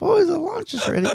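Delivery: very high-pitched voice. Recalling how Shirley called the boys to lunch; imitating Shirley. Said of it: "Shirley, because that was spot on".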